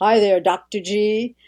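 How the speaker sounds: put-on deep voice of a radio man. Retelling how a radio man used to greet her: imitating a radio man's deep voice. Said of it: "his voice was at depth".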